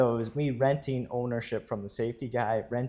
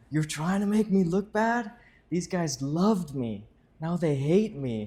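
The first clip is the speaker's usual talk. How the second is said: in-your-face angry tone, pitched up; 6 semitones higher than usual. Retelling a man who gets right up in their face: imitating an angry man. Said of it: "and he's angry".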